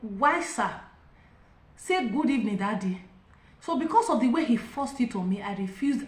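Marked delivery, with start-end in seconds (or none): none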